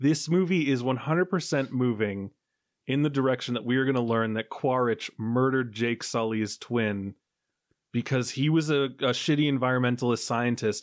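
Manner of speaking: ordinary delivery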